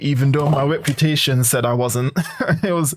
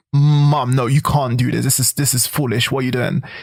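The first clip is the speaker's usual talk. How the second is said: acted-out, mock arguing tone. Recalling childhood arguments with their mom, repeating their own words: retelling arguing with mom. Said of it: "I'm like".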